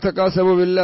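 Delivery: plain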